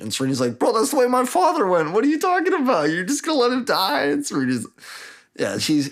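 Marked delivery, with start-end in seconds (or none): 0.6-4.1 play-acted, very high, frantic, freaked-out outburst. Retelling a story scene where a character is freaking out. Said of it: "she's tweaking".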